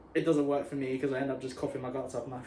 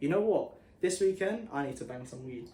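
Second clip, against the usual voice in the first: ordinary talk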